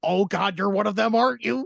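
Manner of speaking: imperfect fake American accent. Quoting a movie character pretending to be American: imitating a put-on American accent. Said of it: "his attempt at the American accent".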